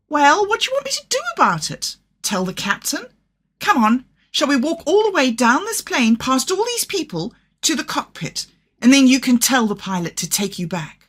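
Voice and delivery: shrill, fed-up, exasperated voice with swooping pitch. A narrator reads a hostess losing patience with an unaccompanied child, shrill and exasperated. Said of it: "Her shrill voice, taut with exasperation".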